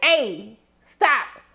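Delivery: ordinary delivery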